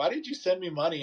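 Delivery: acted, amused, spoken through laughter. Retelling how the sponsor reacted to being paid: imitating someone laughing while asking. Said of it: "laughing, like, laugh out loud".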